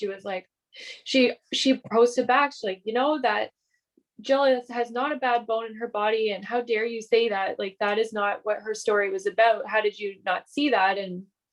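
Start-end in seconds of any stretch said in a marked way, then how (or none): none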